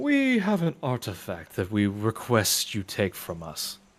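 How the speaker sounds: otherworldly, ethereal, echoing voice. In a roleplay, voicing a group making a request of another character, ethereal echoey voice. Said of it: "this kind of ethereal, echoey mi- uh, voice to them".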